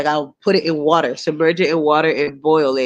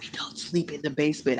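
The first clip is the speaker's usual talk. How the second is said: soft, breathy, hushed whisper; 13 dB quieter than usual. Retelling what she said to the speaker, in a whisper. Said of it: "She's whispering".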